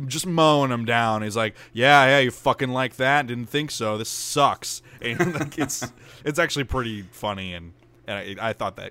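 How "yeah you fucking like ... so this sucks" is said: mock sarcasm, higher and louder. Retelling how he taunts game zombies while mowing them down, retelling a sarcastic taunt. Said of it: "very sarcastically".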